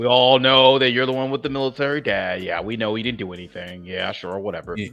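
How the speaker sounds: very loud, high, dripping sarcastic tone. Acting out what he said to her, imitating a sarcastic remark. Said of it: "he was being sarcastic when he said it".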